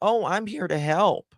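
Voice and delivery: put-on innocent, harmless voice, pitched high. Mocking a man who keeps lying to women and reporters, mock-innocent. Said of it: "he tries to act so innocent".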